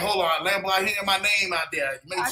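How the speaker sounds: put-on dog character voice. Voicing the dog Cookie hearing her name: voicing a dog. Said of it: "she's already ready, like".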